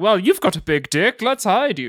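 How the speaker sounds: slow, drawn-out, plummy upper-class lady voice. Retelling a movie scene, voicing the lady in the car: imitating a posh lady. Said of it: "a posh lady's".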